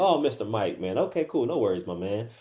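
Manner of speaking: relaxed, friendly, laid-back conversational tone. Showing how to talk to a client on a call: laid-back conversational tone. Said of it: "I'm making it a conversation".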